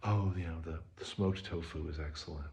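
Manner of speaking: put-on relaxed hushed voice. Describing a hippie vegan restaurant owner, imitating his super chill quiet voice. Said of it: "Super chill, like quiet voice".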